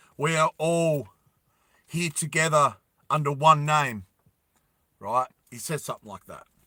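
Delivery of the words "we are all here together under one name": husky voice, projecting like an orator. Retelling a speech to a crowd: imitating a husky voice. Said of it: "he had, like, a husky, husky voice".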